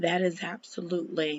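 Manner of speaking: very soft half-whisper under the breath. Speaker comments on a story they just told, half-whispering. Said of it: "I don't even know why I'm whispering".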